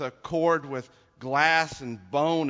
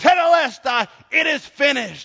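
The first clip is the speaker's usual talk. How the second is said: high, loud yelling. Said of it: "And then he yells out".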